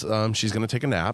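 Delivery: ordinary delivery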